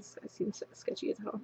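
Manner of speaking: breathy, hushed, very quiet whisper under the breath. Retelling a whisper to a manager beside a customer: retelling a whisper. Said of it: "so I whispered to him".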